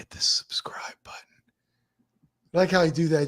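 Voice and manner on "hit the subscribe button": soft, hushed whisper under the breath. Host greeting a viewer who just came into the stream, whispering. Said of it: "Just whisper it".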